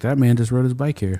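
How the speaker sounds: ordinary talk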